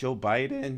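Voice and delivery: voice breaking and cracking on a name. Repeating a name right after noticing a crack, voice cracking. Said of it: "It happened again".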